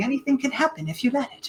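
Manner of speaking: put-on British accent. Quoting a line in a Mary Poppins-ish accent: Julie Andrews Mary Poppins-ish accent. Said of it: "Julie Andrews in her Mary Poppins-ish accent".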